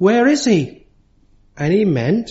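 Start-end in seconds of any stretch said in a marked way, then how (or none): 0.0-0.8 loud, raised, high-pitched calling out. A speaker recounts an old man calling out after a church service: retelling a loud call. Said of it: "he said in a loud voice".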